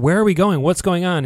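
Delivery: screamed out, high-pitched. Retelling a book's opening carriage ride: imitating Moore screaming. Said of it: "he's screaming".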